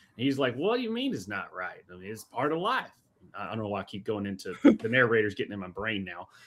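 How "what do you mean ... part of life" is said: put-on Southern American accent creeping in. Retelling a man's reply during a debate, with a Southern accent coming out. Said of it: "Your southern is coming out".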